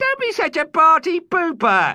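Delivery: very high, loud, chortling computer voice. Narrator voices Ada, the ship's onboard computer, answering Commander Niner, chortling. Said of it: "[name] Niner a nine-year old boy whose home is a spaceship along with his dad, grand dad and the [name]’s onboard computer [name]".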